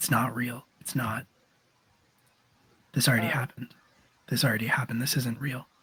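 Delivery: quiet, soft murmur, as if to himself. In a played scene, the speaker voices a character saying quietly to himself. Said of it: "saying quietly to himself".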